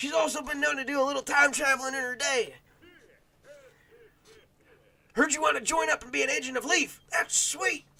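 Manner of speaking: very high, tough science-guy character voice. Playing a game and voicing a character's lines, tough, sciencey guy voice. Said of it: "a sciencey, tough voice for this guy".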